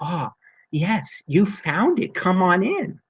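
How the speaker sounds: slow, sweet-sounding voice. Telling a story, voicing the woman who answers a visitor, in a sweet voice. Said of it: "she says with a sweet voice".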